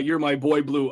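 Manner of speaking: ordinary delivery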